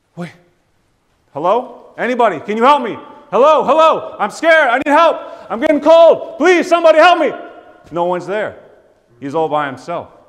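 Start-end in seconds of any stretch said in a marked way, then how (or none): 0.1-7.3 very high, very loud, terrified, frightened pleading. Acting out a man alone, calling for help: imitating a scared man pleading for help. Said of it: "And he has that fear".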